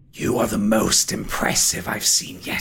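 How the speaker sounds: low, ghostly undead spectre voice. A game master voices a spectre addressing the players; spectre voice. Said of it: "is a spectre. He is... He takes form in the centre of the room as the top half of a man".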